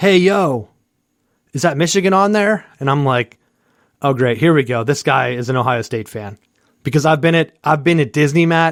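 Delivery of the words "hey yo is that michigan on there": put-on yell, much higher pitch. Retelling a bouncer outside a bar calling out to the speaker, imitating a yell. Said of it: "And he yells".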